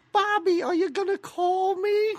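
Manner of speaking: very high, childlike, drawn-out put-on voice. Retelling a movie scene where a girl asks bobby: put-on prostitute voice. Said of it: "your prostitute voice".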